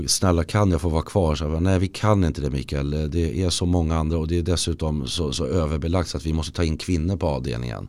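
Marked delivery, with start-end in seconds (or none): none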